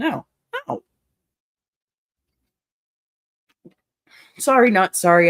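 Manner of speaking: heated animated outburst. Reacting to a story of a party thrown against the speaker's wishes: getting heated. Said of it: "I'm getting a little heated on this one".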